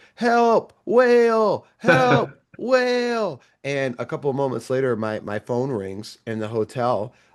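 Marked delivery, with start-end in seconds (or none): 0.2-3.4 very high, all-out, drawn-out yell. Retelling yelling for help in a hotel room, retelling a yell at top of lungs. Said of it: "I yell like at the top of my lungs".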